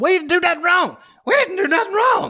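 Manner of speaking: very high, worked-up, animated voice, cracking. Mocking a speech by Jimbo Fisher: animated Jimbo Fisher impression. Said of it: "how he talks when he gets real animated".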